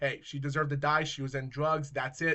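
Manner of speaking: ordinary talk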